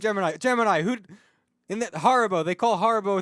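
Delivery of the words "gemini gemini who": put-on shout, higher and louder. Retelling a shout down from the caster desk: imitating someone shouting. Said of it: "And you shouted, like".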